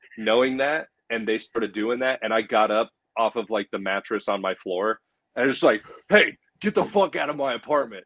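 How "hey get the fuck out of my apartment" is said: forceful, mild, pitched-up, held-back yell. Retelling getting up to throw people out: imitating own past yelling. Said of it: "started yelling at them".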